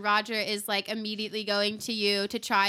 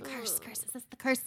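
hushed, half-whispered crowd murmur; 2 semitones higher, 6 dB quieter than usual. Voicing townsfolk reacting to magic on stage: half-whispering crowd. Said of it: "You hear people whispering".

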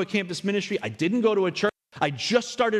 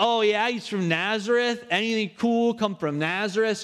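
cheeky, sassy tone; 2 semitones higher than usual. Retelling Nathanael's reply to Philip's invitation: acting out a sassy Nathanael. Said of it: "Nathanael's a little sassy with Philip".

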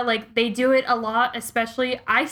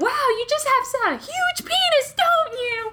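acted mocking yell, much higher. Retelling what she yelled at a driver over road rage; retelling a mocking yell. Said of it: "I think I yelled at them like".

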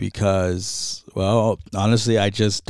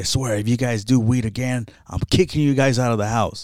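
angry, fatherly, threatening tone; 2 semitones higher than usual. Retelling how dad threatened to kick them out: imitating dad's angry threat. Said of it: "he was like".

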